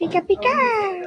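high, slow cartoon creature cry.

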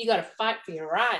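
sudden, put-on American accent. After a throat chakra card comes out, speaker talks in a put-on american accent. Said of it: "Talking like an American".

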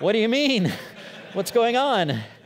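high, loud, baffled, alarmed, startled tone.

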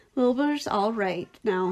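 plain reading voice

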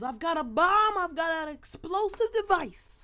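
very high, loud, playful yell. Retelling yelling a joke to friends about a toy: retelling a yell. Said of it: "I yell to my friends".

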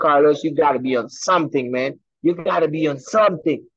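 plain

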